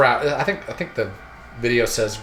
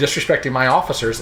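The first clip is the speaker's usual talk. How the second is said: normal talking voice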